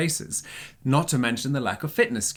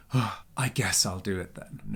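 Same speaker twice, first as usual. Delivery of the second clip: put-on grudging, huffy, sulky teenager voice; 4 semitones lower, 3 dB quieter than usual. Acting out a reluctant reply to a should: mock-huffy teenager voice. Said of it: "in the huffiest teenager voice there is".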